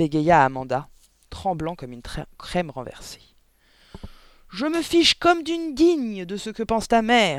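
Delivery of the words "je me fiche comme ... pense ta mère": full-throated, high, shrill yelling. Answering a stammering child, a woman yells. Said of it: "hurla le Gourdin".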